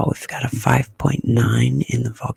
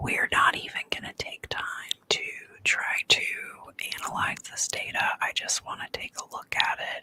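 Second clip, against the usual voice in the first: quieter whispered speech. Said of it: "I'm just gonna whisper it".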